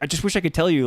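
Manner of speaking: acted begging, imploring delivery. Retelling how Ben pleads with a group: imitating Ben pleading. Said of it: "Ben right here is just pleading with them".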